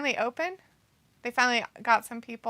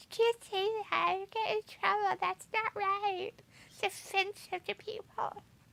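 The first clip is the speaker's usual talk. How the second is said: higher, softer, mock scolding tone. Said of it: "because you'll be like".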